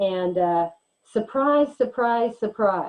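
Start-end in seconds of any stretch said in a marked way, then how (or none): 1.1-2.9 dry, heavy sarcasm with feigned surprise. Telling students about a study on lecture attendance: sarcastic. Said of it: "and I'm being sarcastic here".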